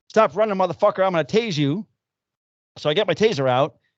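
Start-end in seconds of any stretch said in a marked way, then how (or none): 0.1-1.8 mock commanding call, pitched high. Retelling a foot chase, imitating own yelling at a running suspect. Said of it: "And I'm yelling".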